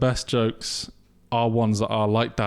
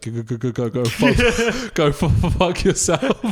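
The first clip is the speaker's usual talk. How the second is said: put-on stammer, higher and louder; 6 semitones higher, 5 dB louder than usual. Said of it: "the guy with the stutter".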